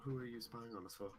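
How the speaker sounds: quiet, hushed, low-key voice that still carries. A game narrator voices a woman speaking to the players; speaking quietly. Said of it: "and she says quietly".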